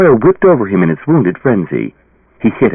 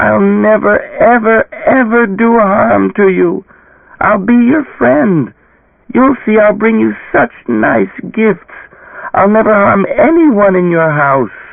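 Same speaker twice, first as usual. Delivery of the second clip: small, faint, very high-pitched voice; 11 semitones higher than usual. Narrator reading the creature's reply after the boy demands an oath, faint, high voice. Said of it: "it cried in a faint, high voice".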